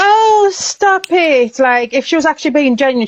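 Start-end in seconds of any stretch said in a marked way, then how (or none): 0.0-1.6 insincere, fake, put-on, pitched-up delivery. Mocking how fake another person sounds: imitating her fake protest. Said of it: "have you noticed how fake she is?".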